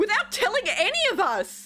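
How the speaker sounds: shouting in anger. Voicing a character storming out of a room: shouting in anger. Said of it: "continues, like, shouting".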